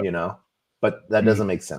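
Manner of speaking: normal talking voice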